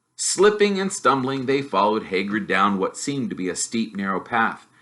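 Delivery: plain reading voice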